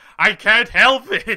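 laughing breathlessly. Teased about typos, the audience replies, laughing breathlessly along with her. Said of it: "laughing breathlessly right along with her".

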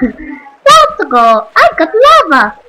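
very loud, swooping, bouncy, botched video-game hero voice. Gamer narrating his play, doing his worst Mario impression. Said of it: "that was my worst Mario impression ever".

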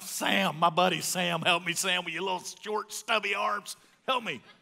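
loud yelling voice. Retelling being pinned under a weight bar, calling his buddy, imitating a yell for help. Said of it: "And now I'm yelling for".

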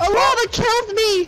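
yelling out. Playing a game on stream, screaming. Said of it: "I'm sorry for screaming".

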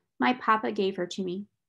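ordinary delivery

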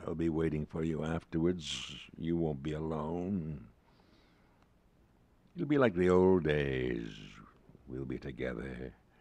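icy, intense voice pitched deep. A dead friend speaks to the narrator, cold, deep and intense. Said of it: "It's [name]. Old [name]. ... Cold, deep and intense".

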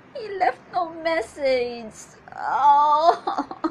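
exasperated, frustrated, fed-up delivery. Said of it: "her frustration about these games guys play".

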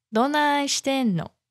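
falling pitch on the final "no". Showing osaka dialect intonation in a phrase: pitch drop on final no. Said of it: "it's very common to sort of drop the intonation at the end of the phrase".

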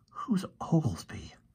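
hushed, whispered aside. Fergie looks at the professor and asks him a question, whispered. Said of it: "he whispered".

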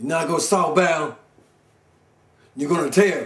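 sassy, rude tone full of attitude. Retelling what a lady on the transit said: imitating her attitude. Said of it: "she's talking to me with an attitude".

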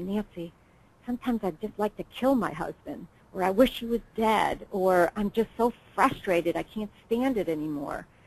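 very quiet, hushed, barely-there voice. Quoting caregivers confiding their frustrations: imitating a very quiet voice. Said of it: "in a very quiet voice".

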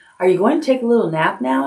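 polite, courteous. A girl sitting on a man's back asks him, politely. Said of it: "asked Pippi politely".

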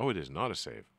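ordinary talk

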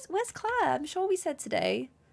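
put-on sad little voice. Imitating her teacher wondering where she is: put-on sad little voice. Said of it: "I'm giving her a really sad little voice".

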